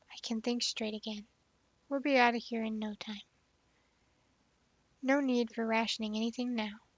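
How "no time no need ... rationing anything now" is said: ordinary talk, nothing marked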